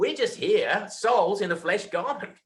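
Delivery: clumsy put-on Australian accent. Quoting what Jack says in the film, in a bad Australian accent. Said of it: "Sorry about my bad Australian accent".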